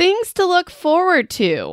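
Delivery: dripping sarcasm, very high-pitched, sing-song. Venting to listeners about a book, listing things to look forward to, sarcastic tone. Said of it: "That's sarcasm, in case you couldn't hear it".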